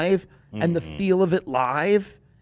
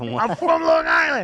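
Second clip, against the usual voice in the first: put-on scream, higher pitch; 12 semitones higher than usual. Retelling a guy in the audience at the second show: imitating someone screaming. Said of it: "a guy just screaming".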